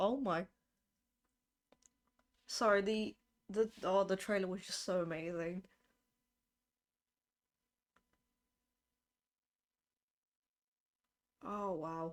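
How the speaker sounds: tearful voice, on the verge of tears. Speaker reacting to a game's event trailer, tearing up. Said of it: "Why did I just start tearing up?".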